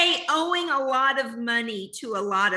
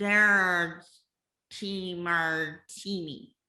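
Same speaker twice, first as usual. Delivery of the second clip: put-on low, tipsy, drunk-sounding voice; 7 semitones lower, 5 dB quieter than usual. Asked to say the line as if drunk; drunk voice. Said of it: "Say it like I'm drunk".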